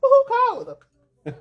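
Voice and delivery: high, loud, slow, mocking disbelief.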